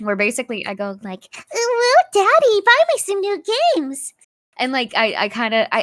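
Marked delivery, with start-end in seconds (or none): 1.5-4.1 very high, cutesy kitten voice. Demonstrating the voice a viewer redeem makes the speaker use: Discord kitten voice. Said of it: "I have to talk like this for five minutes straight".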